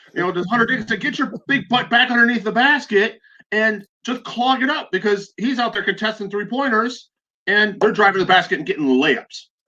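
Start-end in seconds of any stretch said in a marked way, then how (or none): 0.3-4.9 mock sports-fan yell, pitched up. Retelling what was yelled at the TV during the game: retelling screaming at the TV. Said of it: "I'm screaming at the T V".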